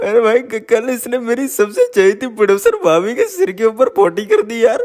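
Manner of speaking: high put-on naive voice.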